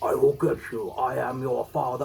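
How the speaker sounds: deep, hoarse, raspy movie-style voice. Doing a Star Wars impression for the episode theme: hoarse Star Wars voice. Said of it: "you don't have a horse voice".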